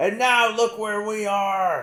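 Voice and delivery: very high, loud, angry ranting shout. Retelling a scene where Ragnar is yelling: imitating Ragnar yelling. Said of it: "he's just going off".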